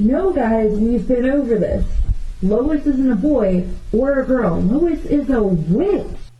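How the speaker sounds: put-on child calling out. Retelling what a third child in class said: imitating a child yelling. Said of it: "a third child suddenly yells".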